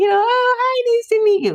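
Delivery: put-on loud, very high-pitched baby-talk voice. Imitating how a YouTuber's wife talks: imitating baby talk. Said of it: "his wife talks like a baby".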